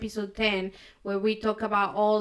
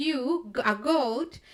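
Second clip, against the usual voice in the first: put-on scoffing through laughter, mocking disbelief; 3 semitones higher than usual. Retelling how he laughed when the goat challenged him, retelling laughing speech. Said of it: "he was like laughing like".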